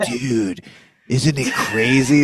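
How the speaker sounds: slow, hushed stage whisper. Retelling how someone half-whispered in your ear: imitating a half-whisper. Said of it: "he tried to whisper in your ear".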